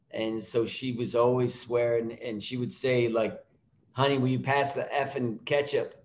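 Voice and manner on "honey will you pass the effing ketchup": usual speaking voice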